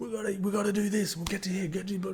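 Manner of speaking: high-pitched, urgent yelling. Retelling a footy player screaming instructions at teammates: imitating Gerbo yelling. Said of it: "he's screaming and just yelling".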